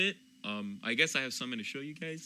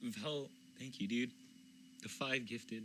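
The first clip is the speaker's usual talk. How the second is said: tearful, quieter; 3 semitones lower, 11 dB quieter than usual. Thanking vel for the gifted subs, tearing up. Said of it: "I just keep tearing up".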